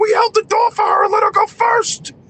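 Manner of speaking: put-on, very high-pitched, worked-up flipping-out outburst. Retelling a friend's reply to the accuser: imitating a friend flipping out. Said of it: "he started flipping out".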